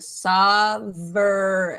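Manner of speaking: sovereign drawn out slowly, every sound clear. Modeling a word's pronunciation for a learner, slow careful pronunciation. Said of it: "I guess I'll say it all slowly".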